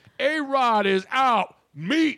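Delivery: high, slow play-by-play announcer scream. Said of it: "and I scream".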